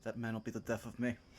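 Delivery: very soft, deep, low, hushed muttering. After the party suggests trying the mists again, Branson face-palms, muttering under his breath. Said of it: "You just hear under his breath".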